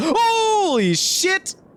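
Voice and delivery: sudden scream. Reacting to a surprise while talking to listeners, screaming. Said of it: "I didn't mean to scream in your guys' ear".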